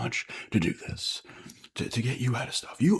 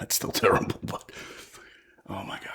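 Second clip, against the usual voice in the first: speech broken up by laughter throughout; 5 semitones lower than usual. Reacting to a friend's gambling losses: laughing while talking. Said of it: "I'm sorry I'm laughing".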